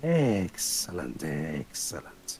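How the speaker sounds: very low, sibilant, hissing lizard creature voice. A narrator voices the lizardine creature speaking to you, in a low hissing voice. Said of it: "In a low, hissing voice".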